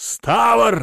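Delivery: very high, drawn-out barked bellow. Glancing around, he calls out to a man by name, bellowing a name. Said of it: "гаркнул он".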